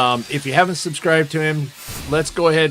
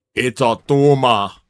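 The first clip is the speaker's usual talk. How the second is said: thick, heavy put-on Austrian accent; 3 semitones lower, 3 dB louder than usual. Joking about leaving a medal, saying a line in Arnold Schwarzenegger voice. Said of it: "In Arnold Schwarzenegger voice".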